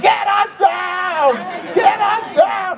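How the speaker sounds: high, slow, panicked screaming. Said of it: "And I started screaming".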